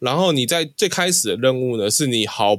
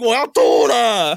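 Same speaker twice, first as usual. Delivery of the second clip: re-enacted shout, much higher; 11 semitones higher, 3 dB louder than usual. Recalling a night in Tamsui after hours of gaming, calling to the other player: retelling a shout. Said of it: "我对着桑麻大喊".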